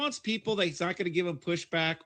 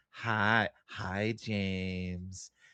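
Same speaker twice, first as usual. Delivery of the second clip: mock sexy voice, creepy, lower and quieter; 9 semitones lower, 4 dB quieter than usual. Imitating how Sarah thanks super chat senders: imitating a creepy mom voice. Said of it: "her creepy mom voice is really great".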